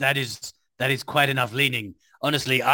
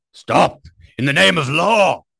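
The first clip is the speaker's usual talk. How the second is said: very loud, rough bellow from the chest; 3 semitones higher, 8 dB louder than usual. Player declares what their character does in the scene, shouting at top of lungs. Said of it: "at the top of my lungs I shout".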